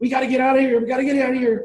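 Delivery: frantic, high-pitched screaming.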